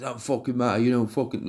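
acted-out angry, aggressive outburst. Retelling a clash over his lass as the other man starts kicking off. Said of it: "and then he starts kicking off".

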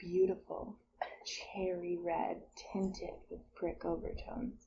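drawn-out, slow, breathy, sultry, sensual whisper. Rereading wine tasting notes after being asked to go slow: slow, sensual reading. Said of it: "do it slow then".

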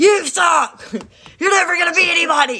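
high, loud mock scream.

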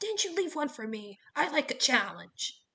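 sharp, snapped, loud, high-pitched, snappy tone. Hedge turns on Jason, the boy, snapping at him. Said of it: "he snapped at Jason".

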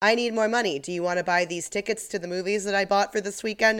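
ordinary talk, nothing marked

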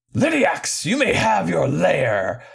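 declaiming, proclaiming, called out like a decree. Retelling a game, the speaker voices Hazim calling out in a booming voice. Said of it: "he called out in a booming voice".

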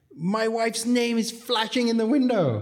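shrill, very high-pitched screaming. Retelling the guy's reaction to the new sign: imitating someone screaming. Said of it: "comes screaming".

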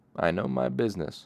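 smug, self-satisfied, boastful tone. A smith replies to Kote, speaking smugly. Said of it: "the smith said smugly".

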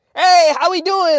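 very high, very loud, shrill fake Chinese accent. Recalling jokingly greeting people once: put-on Chinese accent. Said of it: "in a Chinese ass accent".

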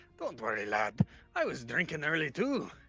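whispered in a put-on voice. Whispering to another character in the game: whispering in character. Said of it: "I whisper to Kumar and I say".

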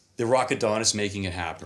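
normal talking voice

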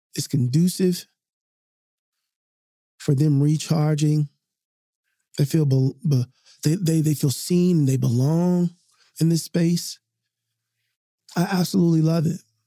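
choked up with emotion. Talking about hearing their teenage kids sleep, getting emotional. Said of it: "I'm getting emotional just talking about it".

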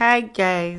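strained, weary voice. Opening the recording with a greeting: forced, tired greeting. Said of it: "my hi, guys sounds very, very, um, forced".

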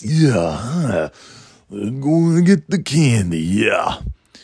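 slow character voice, every word drawn out. Talking about a Halloween costume idea, doing a Macho Man Randy Savage voice. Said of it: "Because I love to do the voice".

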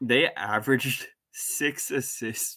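slow, laugh-laced, struggling not to laugh. Reporting a bad team's assist average, laughing while talking.

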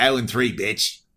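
terrible put-on Australian accent. Voicing a big cow in Australia taunting the listener, terrible Australian accent. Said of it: "Terrible Australian accent".

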